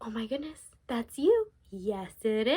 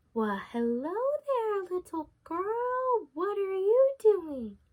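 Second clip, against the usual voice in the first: overly friendly, charming, sweet wolf voice, pitched up; 7 semitones higher than usual. Telling a story, voicing the wolf greeting a little girl: wolf's friendliest voice. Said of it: "in his most friendliest voice that he could come up with".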